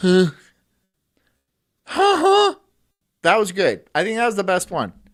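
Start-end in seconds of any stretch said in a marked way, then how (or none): 0.0-2.5 very high, loud put-on laugh. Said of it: "I was trying to do the Pee Wee Herman laugh".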